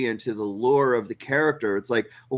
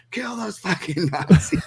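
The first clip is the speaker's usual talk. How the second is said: mock, high, shouted yell from far back; 7 semitones higher than usual. Retelling a guy yelling from the back of the theater: imitating someone yelling. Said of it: "one guy even yelled out from the back".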